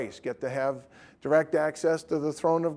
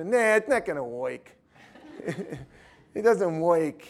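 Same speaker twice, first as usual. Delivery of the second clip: put-on New Jersey accent on every word; 3 semitones higher than usual. Retelling the snake-bite story, voicing a doubter, Jersey accent. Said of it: "With a Jersey accent".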